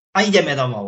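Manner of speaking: brisk, sharp, firm tone brooking no refusal. Speaking to a small child about going home, sharp, firm commanding tone. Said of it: "A to teraz tak ostro, rázne, rázno, neodmietavým tónom".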